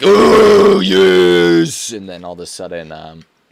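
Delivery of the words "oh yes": rough, drawn-out warrior yell, very high, very loud. Retelling playing a lady character in games: imitating own battle warrior voice. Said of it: "I just start letting out my battle warrior voice".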